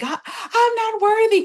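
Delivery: mock wailing sob, very high crying scream. Retelling how a woman in the kitchen broke down, imitating someone crying and screaming. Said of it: "crying and screaming".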